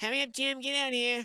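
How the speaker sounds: very high, loud calling out pitched to carry. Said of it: "make her voice carry".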